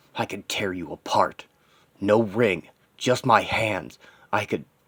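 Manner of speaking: ordinary delivery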